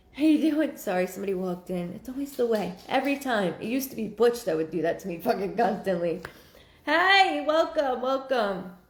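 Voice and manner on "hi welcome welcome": high, raised, loud yelling. Welcoming everybody on a Friday, yelling. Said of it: "I don't know why I'm yelling today".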